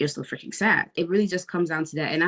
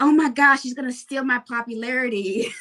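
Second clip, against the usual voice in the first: very loud, high-pitched blurted outburst; 8 semitones higher than usual. Retelling blurting something out in the middle of class, retelling saying it super loud. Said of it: "I said like super loud".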